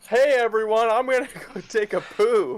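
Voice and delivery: very high, loud calling voice. Pitching a friend's new catchphrase, speaker acts out a loud announcement to everyone. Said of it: "Loudly announce to everyone".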